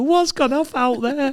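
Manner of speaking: very high, squeaky, nervous voice. Retell Warnock asking his players at half time in the changing rooms, Warnock voice with a bit of a squeak. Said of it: "he had a bit of a squeak to his voice".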